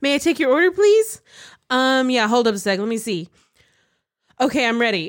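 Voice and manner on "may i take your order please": cheerful, chipper, quick voice like a drive-thru speaker. Voicing the drive-thru speaker asking for an order, chipper drive-thru speaker voice. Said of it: "Chipper voice comes from drive-thru speaker".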